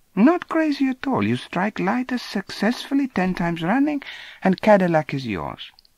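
put-on high, swooping South American accent. Narrator voices a little man speaking to a boy, South American accent. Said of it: "Just then I noticed a small, oldish man walking briskly around the edge of the pool. ... I couldn't precisely identify the accent, but I felt fairly sure he was some sort of a South American".

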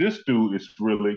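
ordinary talk, nothing marked

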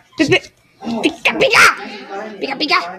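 high cartoon creature cry with a laugh.

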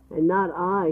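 plain

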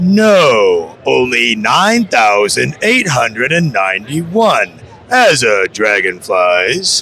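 deep, low creature voice. Asking viewers to guess The NeverEnding Story character being done, Falcor voice. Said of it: "who this character is I'm doing right now".

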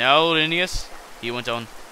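ordinary delivery

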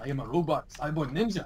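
put-on thick Japanese accent. Playing a robot cyborg ninja character, in a very heavy Japanese accent. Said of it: "I am using a very, very Japanese accent".

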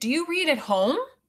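voice lifts a little, rising tune on home. Modelling a sentence for learners to repeat, rising question intonation. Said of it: "Where our voice goes up a little bit".

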